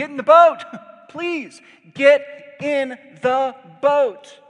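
very loud, very high, drawn-out pleading scream. Retelling how Noah pleads with neighbors as rain falls: imitating Noah screaming. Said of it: "is screaming".

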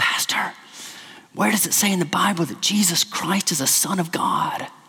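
hushed whisper. Telling a joke, the speaker voices a church member phoning her pastor: retelling a whispered question. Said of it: "she's speaking to him in a whisper".

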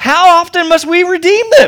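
play-acted, very high, loud, anguished sarcasm. Recounting a question put to people selling others back into slavery: retelling with pained sarcasm. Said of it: "just dripping with pain and anguish, but also sarcasm".

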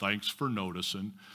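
very low, soft, dry sarcastic mutter. Quoting Eeyore's reply after his friends bowl him over, mock-sarcastic Eeyore voice. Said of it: "And he's so sarcastic".

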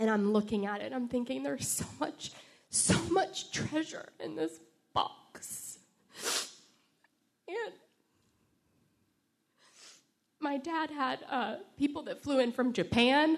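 teary voice. Recalling carrying a box at their dad's memorial, tearful. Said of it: "Sorry for the tears".

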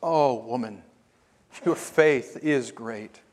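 acted compassionate tone. Retelling his reply to the Canaanite woman, acting out compassion. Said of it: "compassion in his voice".

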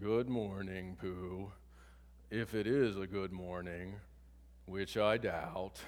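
gloomy, very low-pitched voice. Retelling a Winnie the Pooh scene, answering a greeting: imitating Eeyore gloomily. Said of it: "Eeyore says gloomily".

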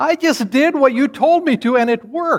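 mock very high, overjoyed, loud joyful shout. Retelling what a four-year-old said when the trick worked: imitating an even louder joyful voice. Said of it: "in an even louder voice, with just his face lit up with joy".

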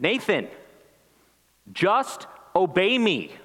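exasperated, a bit too loud, drawn-out, frustrated. A father recalls a frustrated moment with his son, retelling a too-loud frustrated order. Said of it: "in a voice that was probably a little bit too loud".

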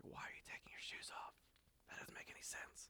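breathy, very quiet whisper. Retelling a joke about two friends finding a bear: imitating a whisper. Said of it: "the other friend whispers".

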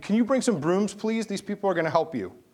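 mock-polite high yell. Retelling how a man called down to a theater worker, imitating someone yelling. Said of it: "And he yells down".

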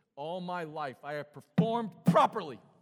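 furious, very loud angry outburst. Retelling how the son unloads about his life, acting out angry outburst. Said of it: "You got to hear it like that. ... That's the tone. He's angry".

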